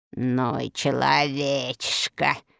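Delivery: low, quiet, scornful, disdainful voice. After Ruf Bilan backs out of the cave, the fairy speaks of him contemptuously. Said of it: "презрительно молвила фея".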